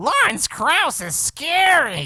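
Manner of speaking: very high, nasally shrill, scary, stretched voice. Retelling what a sidekick in a reviewed video said: imitating a shrill nasally voice. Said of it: "who had a really shrill, nasally voice and was just like".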